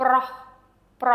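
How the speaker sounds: airy aspirated H at the end. Teaching learners the word for male, repeating it: breathy H at the end. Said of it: "it has the H sound, the air at the end".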